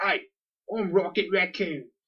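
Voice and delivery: put-on London cockney accent. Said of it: "He had a cockney".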